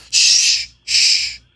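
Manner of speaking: very loud, repeated shh, shh. A hidden voice from a tower basket hushes you as you talk, shushing. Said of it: "shushing you as you talk".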